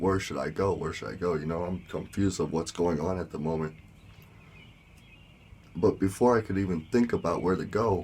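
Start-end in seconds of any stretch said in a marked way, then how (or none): none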